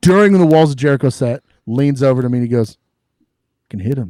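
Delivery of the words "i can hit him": very calm, cool, smooth, unfussed delivery. Retelling what a friend said at a show: imitating a real calm voice. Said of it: "Real calm, real smooth".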